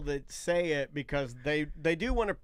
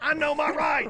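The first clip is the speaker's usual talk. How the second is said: mock very high, shrill, loud scream; 11 semitones higher, 5 dB louder than usual. Relaying a chat comment about someone refusing a breathalyzer: retelling a scream. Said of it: "she screams".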